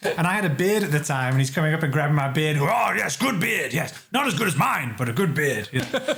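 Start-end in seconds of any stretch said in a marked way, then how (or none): 2.6-5.7 loud shout, with gusto. Retelling Brian Blessed grabbing a beard: imitating Brian Blessed. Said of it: "he's shouting out".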